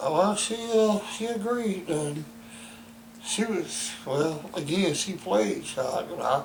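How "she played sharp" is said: played stressed and drawn out slowly. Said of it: "emphasize the word played".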